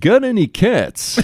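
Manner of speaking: pitched way up, alien-like. Remembering the old TV show, the speaker does an ALF impression. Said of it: "That was a pretty good impression".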